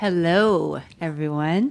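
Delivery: announcer-style radio voice delivery. Head of the audio program greeting the audience, in a radio voice. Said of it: "I like that voice".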